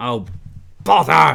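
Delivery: shouting angrily. Fiddling with a mechanical contraption, looking for a button: angry shout. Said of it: "I heard you shouting, "Oh, bother," in your angry voice".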